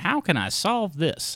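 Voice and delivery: high, slow, deliberate, pondering detective voice. Imitating Laura puzzling over a movie: imitating Laura playing detective. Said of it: "she puts on her little Sherlock Holmes hat".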